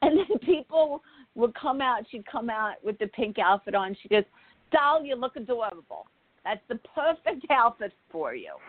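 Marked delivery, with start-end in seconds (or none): 4.7-8.5 put-on clumsy, god-awful, gushing New York accent. Retelling what a woman said to someone in a new outfit, in a bad New York accent. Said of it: "I know my New York accent is god awful".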